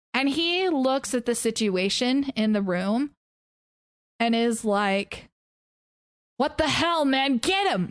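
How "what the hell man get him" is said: rousing, rallying delivery. Narrating a scene, a character with a staff yells at the embers: yelling. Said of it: "And yells at the embers".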